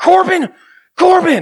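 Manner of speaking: very high call, acted out, angry and panicked. Retelling his mom calling for him while he hid, imitating mom's angry panicked call. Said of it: "Like it was some anger mixed with panic".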